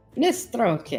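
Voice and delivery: put-on strong, heavy Russian accent. Repeating a name aloud in the game, in a very Russian-sounding accent. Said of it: "very Russian".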